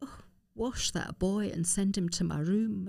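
sotto voce stage aside. Imitating a major's remark in the officers' mess: stage-aside sotto voce remark. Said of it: "in a real sort of stage-aside, sotto voce thing".

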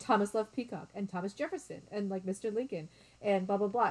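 normal talking voice

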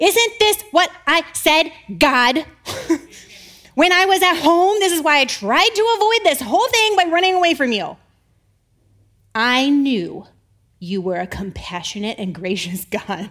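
put-on, very angry, furious voice. Reading a prophet's complaint to god as him: imitating someone super pissed. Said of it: "He's super pissed".

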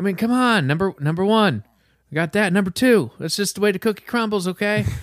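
mellow, compassionate, kind voice pitched very high. Retelling a friend's impression: compassionate, mellow Joe Biden impression. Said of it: "I do the compassionate, mellow Biden".

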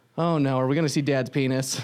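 loud, carrying put-on five-year-old's blurt. Retelling a five-year-old's remark at a dressing room: imitating a child saying it loudly. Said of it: "she said really loudly so everyone could hear".

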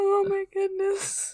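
helpless, high laughter. Podcast co-host recording an episode who can't stop laughing, laughing. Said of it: "I can't stop laughing at this point".

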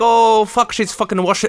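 put-on botched, failed Scottish accent. Telling a folklore tale, acting out a witness's reaction in a bad Scottish accent. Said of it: "I can't do a Scottish accent".

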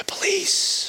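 polite, high-pitched, unvoiced whisper.

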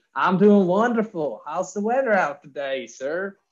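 poor, horrible Southern accent. Starting a role play with Phil about the weather: poor Southern accent. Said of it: "my poor, horrible Southern accent".

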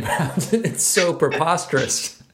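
talking through laughter. Reacting to another speaker's story, laughing while talking. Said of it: "I'm laughing".

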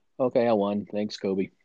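put-on plain old flat monotone. Acting out Kawhi Leonard's words after he won, in Kawhi Leonard monotone. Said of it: "just plain old monotone".

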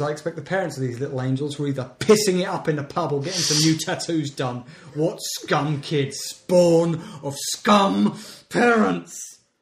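put-on, stuck-up, judgmental, snobbish inflection. Reading out a comment from someone named Bexley, impersonating the commenter's mentality. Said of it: "in my inflection there I have sort of managed to give a good impersonation".

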